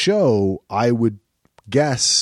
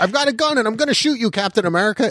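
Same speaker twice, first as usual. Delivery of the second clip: play-acted shrill, very high-pitched screaming; 11 semitones higher than usual. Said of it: "change it so he screams".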